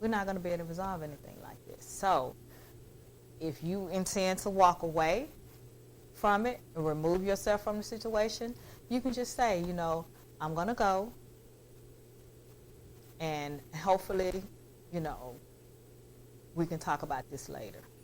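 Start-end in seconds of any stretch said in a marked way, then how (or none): 10.4-17.8 very calm voice, much quieter. Showing how to excuse yourself from a heated situation, in a very calm voice. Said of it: "in a very calm voice".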